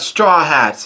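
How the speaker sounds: plain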